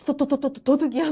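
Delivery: stuttered cry, repeating the first syllable of thief. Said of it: "막 이러잖아요".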